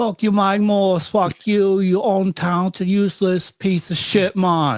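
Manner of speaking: Jamaican accent throughout. Asked on the show to do a Jamaican accent, a co-host obliges in a Jamaican accent. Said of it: "Give me a Jamaican fuck you".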